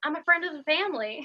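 sweet voice with faint Southern twang. Quoting a character's reply to the principal: sweet slight Southern twang. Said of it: "he just says it so sweet with his, like, slight Southern twang".

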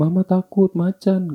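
mock crying, very high and tearful. Retelling how a frightened friend pointed at a male friend, imitating her crying. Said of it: "sambil nangis gitu".

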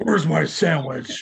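play-acted peeved, cross outburst, loud and high. Imitating Bruce Wayne getting mad at his butler: mock-angry Bruce Wayne impression. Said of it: "When he gets all mad at Albert".

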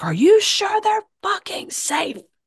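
put-on shrill, climbing scream. Retelling a story, the speaker acts out him screaming at her: retelling a scream. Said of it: "he screams at her and he's like".

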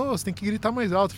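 put-on teasing talk, quick, broken by giggles. Retelling how a woman at the bus stop laughed at the speaker, imitating someone laughing while talking. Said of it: "ela começou a rir de mim".

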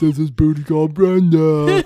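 booming, loud, high, slow, drawn-out put-on voice. Introducing the absent Brenda by imitating her voice: imitating Brenda's voice. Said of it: "That's not how she sounds".

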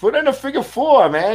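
very high-pitched, hollered screaming. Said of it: "I kept screaming".

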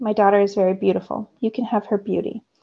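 plain reading voice

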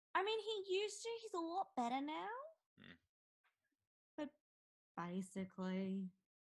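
disappointed, deflated tone. Speaker describing a teenage kid's one-word answers, disappointed. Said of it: "The disappointment in your voice is fantastic".

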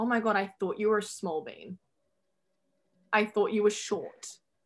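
plain

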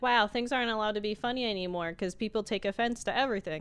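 normal talking voice

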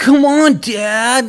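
put-on very high angsty outburst, "dad" drawn out. Retelling a character's outburst at his dad: imitating Mahesh getting angsty. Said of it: "gets a little, like, angsty".

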